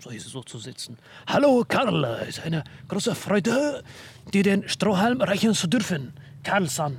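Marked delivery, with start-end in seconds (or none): 1.3-7.0 German with put-on Japanese accent, pitched up. Speaker wants to talk German like a Japanese person: Japanese accent in German. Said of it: "Ich würde gerne Deutsch mit japanischem Akzent reden".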